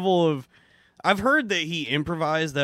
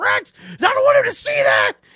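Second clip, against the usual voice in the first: very high, loud, swooping scream; 7 dB louder than usual. Speaker retells his mom running in from the kitchen, imitating mom screaming. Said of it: "She would come running in the living room screaming".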